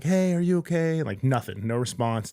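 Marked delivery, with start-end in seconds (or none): 0.0-1.0 mock yelling, high and raised, from a few steps away. Retelling finding a man slumped on the ground, guarded by dogs: retelling yelling to a man. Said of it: "I'm like yelling at the dude".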